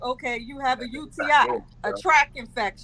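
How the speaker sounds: normal talking voice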